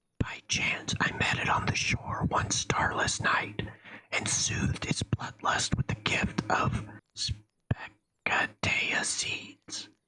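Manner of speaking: hushed, whispering voice. Reading a story where the herbalist leans in to tell a secret: whispering. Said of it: "leans in to whisper".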